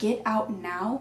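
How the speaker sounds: put-on demonic voice. Retelling what they heard from the car radio, in a demonic voice. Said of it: "in a demonic voice".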